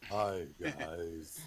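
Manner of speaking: deep, loud, stony stone-like voice. Player voicing a character greeting the group, in a stony voice. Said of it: "He has a stony voice".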